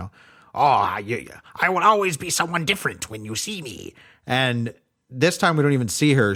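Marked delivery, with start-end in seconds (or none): 0.0-3.9 cartoon witch voice with swooping pitch. Recapping a scene, quoting the Liak Queen in a classic cartoon witch voice. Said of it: "like a classic cartoon witch".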